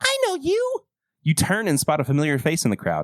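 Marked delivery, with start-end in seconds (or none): 0.0-0.8 put-on very high, whiny, childish kid voice. Narrator voicing a kid from school in the crowd, whiny Wally voice. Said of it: "I wish I hadn't chosen this voice".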